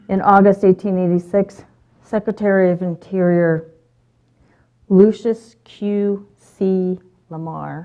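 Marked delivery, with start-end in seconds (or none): 2.0-7.8 very slow, deliberate, each word separated. Speaker recounting Yellowstone history says a tongue-twister name, very slow. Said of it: "I have to say that really slowly".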